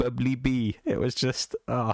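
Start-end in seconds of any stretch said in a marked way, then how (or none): 0.0-0.8 put-on Welsh accent. Recalling saying a chat name in a put-on welsh accent. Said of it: "when I was doing the Welsh voice and saying".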